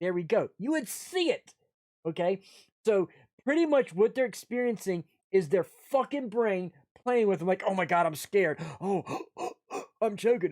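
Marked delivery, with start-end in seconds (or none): 7.7-10.5 imitated scared, panicked choking. Acting out someone whose fear tricks their mind: imitating someone scared and choking. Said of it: "I actually made myself choke just now".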